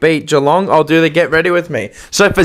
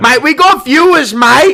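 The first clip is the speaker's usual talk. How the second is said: very high, shrill, high-pitched shout; 9 semitones higher, 3 dB louder than usual. Imitating a friend's voice, pushing for a preview: imitating Paul shouting. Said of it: "He does that one".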